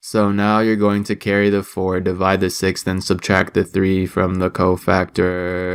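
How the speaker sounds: low, flat, droning monotone teacher voice. Describing a teacher explaining formulas to the class, imitating a monotone teacher. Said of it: "spoke in the most monotone voice".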